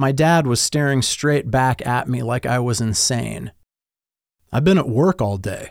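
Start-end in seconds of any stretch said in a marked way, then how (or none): 4.5-5.7 calm, even-toned delivery. The narrator's dad, falsely accused, responds calmly. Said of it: "he calmly responded".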